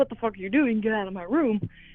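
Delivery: ordinary delivery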